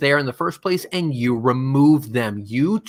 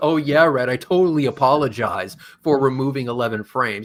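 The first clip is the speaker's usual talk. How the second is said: fake-sorry, snide, sarcastic and insincere. Imitating an apology the other person might give: imitating Flatside apologizing sarcastically. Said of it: "he can be a sarcastic little shit about it".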